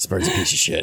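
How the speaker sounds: gruff, tired voice. Speaking as a remembered character right after recalling how he sounded, gruff and tired voice. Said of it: "Like a little bit gruff and tired".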